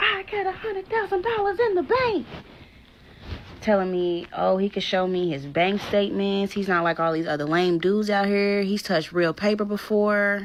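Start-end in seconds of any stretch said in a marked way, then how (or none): 0.0-2.3 mock shrill, enraged, very high-pitched screaming. Recounting a man's outburst at her, the speaker retells him screaming. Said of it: "Now he's screaming again".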